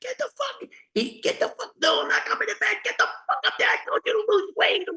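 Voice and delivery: acted, pitched way up, furious drunken angry rant. Recounting a drunk man yelling at her on the stairs, retelling his scream. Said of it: "He screamed at her".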